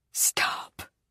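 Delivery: hushed, quiet whisper. Reading a tense story scene aloud, the narrator's plea: quiet. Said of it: "I say quietly".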